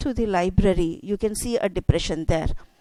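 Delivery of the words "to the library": softly spoken words. Demonstrating a phrase while discussing stress on a question, in a soft voice. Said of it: "Sheila says in a soft voice".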